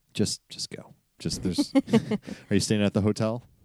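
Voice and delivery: sly, conspiratorial, confiding aside. Retelling what a maintenance worker said, leaning in: imitating a conspiratorial tone. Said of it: "leans in conspiratorially to me and he's like".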